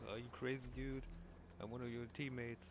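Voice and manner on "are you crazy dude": ordinary delivery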